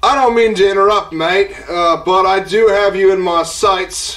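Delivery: put-on Australian accent. Narrator voicing a stranger who interrupts the group: australian accent. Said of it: "you hear an Australian accent".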